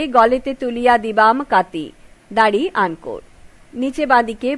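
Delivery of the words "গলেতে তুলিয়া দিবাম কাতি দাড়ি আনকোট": plain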